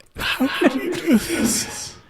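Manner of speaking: very high, hurt, pained crying. Retelling how Mom reacted, imitating a hurt mother. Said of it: "feel her pain in your heart".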